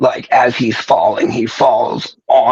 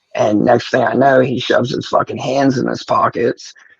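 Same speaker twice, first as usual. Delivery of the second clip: normal talking voice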